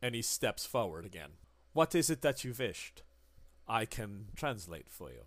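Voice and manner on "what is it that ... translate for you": put-on German accent in English. Voicing a man who offers to translate: german accent. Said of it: "I love the German".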